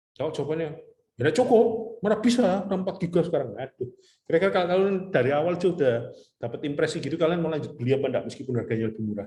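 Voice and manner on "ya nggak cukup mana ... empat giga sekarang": very high, loud, rude and curt snapping tone. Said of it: "ngomongnya nggak enak".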